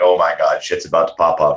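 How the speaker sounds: ordinary talk, nothing marked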